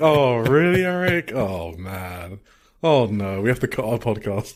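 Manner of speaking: acted crestfallen, deflated, disappointed tone. Echoing a podcast co-host's reaction back at them, imitating a disappointed tone. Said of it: "you sound so disappointed. You're like".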